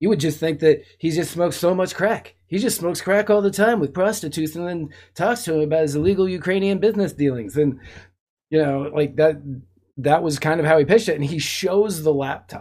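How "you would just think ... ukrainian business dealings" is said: put-on quick, odd little guy voice with New York accent. Retell how Giuliani pitched the laptop to Crowder, in a Giuliani voice. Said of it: "I changed my Giuliani voice".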